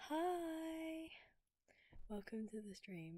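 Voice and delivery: cracking, breaking sickly voice, drawn-out "hi". Greeting the stream after a long break: sick, cracking voice. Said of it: "Sorry if I sound a bit funny".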